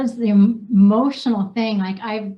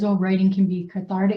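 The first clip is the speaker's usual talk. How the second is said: normal talking voice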